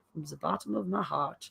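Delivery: put-on German accent. Sending christmas wishes to someone far away, in a weird german accent. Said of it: "I just said that German accent".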